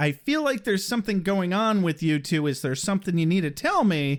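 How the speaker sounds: ordinary talk, nothing marked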